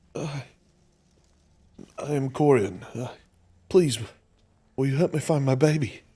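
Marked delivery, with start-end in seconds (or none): 2.0-5.9 heartbroken, desperate voice, higher and louder. Voicing the man asking a stranger for help: forlorn and devastated voice. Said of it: "the voice sounds forlorn and devastated".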